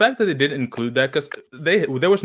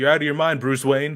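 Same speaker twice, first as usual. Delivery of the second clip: usual speaking voice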